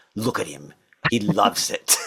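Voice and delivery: put-on heavy, thick German accent, laid on. Retelling what a woman watching from the side said: thick German accent. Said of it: "she had a thick German accent".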